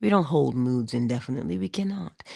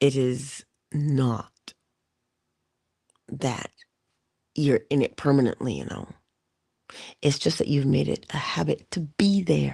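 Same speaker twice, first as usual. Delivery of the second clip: slower, measured, deliberate, unhurried delivery. Speaker repeats a point to listeners, saying it a little slower. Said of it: "I'm going to say it a little slower".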